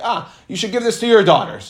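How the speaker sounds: put-on dry, snide, salty sarcastic tone. A speaker retells a woman's unhappy reply about a gift of wine: quoting her sarcastically. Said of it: "in a sarcastic sort of way".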